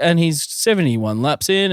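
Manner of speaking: put-on bored commentator voice, no excitement at all. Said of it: "He had just monotone".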